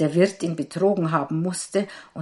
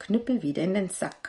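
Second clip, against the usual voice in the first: ordinary delivery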